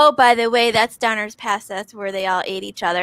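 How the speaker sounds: nonchalant, casual, offhand throwaway tone. Retelling a man's remark while driving in a snowstorm, mock-nonchalant retelling. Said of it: "he's like nonchalantly says".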